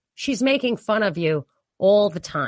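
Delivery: ordinary delivery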